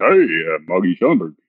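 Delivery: imitated deep baritone. Retelling a man greeting someone waiting for him backstage, in his baritone voice. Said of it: "in his baritone voice".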